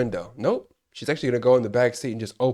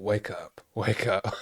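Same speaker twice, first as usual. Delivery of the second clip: mock freaked-out, panicked, urgent pleading tone; 3 semitones lower, 7 dB quieter than usual. Retelling urging a movie character to wake up: imitating own panicked urging. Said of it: "I'm just freaking out".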